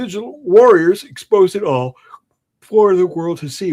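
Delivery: speaking through a yawn. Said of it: "Why the fuck am I yawning?".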